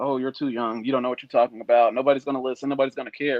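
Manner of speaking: plain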